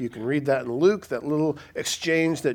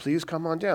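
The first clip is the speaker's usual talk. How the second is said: imitated desperate begging tone; 3 semitones higher, 3 dB quieter than usual. Retelling an official's plea for his son to be healed: imitating someone begging. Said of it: "He's begging Jesus".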